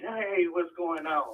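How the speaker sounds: fake-friendly, phony voice, high and slow. Repeating the host's greeting when asked to say it again: mocking a phony greeting. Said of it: "That's phony".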